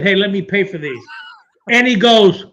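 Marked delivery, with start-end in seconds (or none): none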